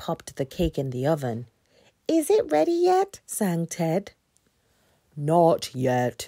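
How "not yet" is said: grumbled, complaining grumble. Big Bear answers Ted's eager question about the cake, grumbling. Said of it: "Big Bear grumbled".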